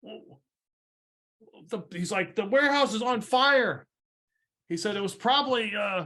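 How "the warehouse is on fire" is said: shouting captain voice, higher pitch. Voicing a ship captain who spots a warehouse fire: captain yelling. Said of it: "the captain on the ship yells".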